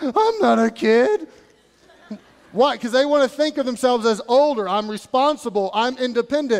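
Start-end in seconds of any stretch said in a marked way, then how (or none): 0.0-1.3 put-on crackly young adolescent voice, very slow. Acting out a seventh grader answering being called kid: little crackly kid voice. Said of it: "in their little crackly voice".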